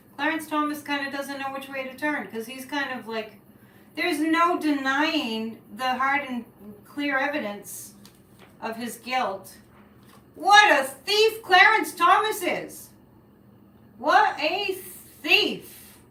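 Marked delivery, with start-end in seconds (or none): 10.4-15.7 loud, drawn-out high yell. The speaker, who admits to yelling tonight, exclaims: yelling. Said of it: "I know I'm yelling tonight".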